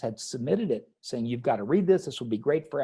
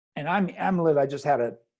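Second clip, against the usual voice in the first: ordinary delivery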